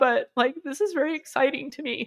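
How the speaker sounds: high, tearful ugly crying, talking through open sobs. Speaking on camera while crying, ugly crying. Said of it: "like ugly crying on camera".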